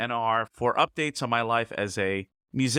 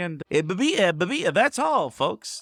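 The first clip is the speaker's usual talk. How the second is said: stammered delivery, pitched up; 7 semitones higher, 4 dB louder than usual. Signing off the commentary, doing a Porky Pig impression. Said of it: "That's my Porky impression".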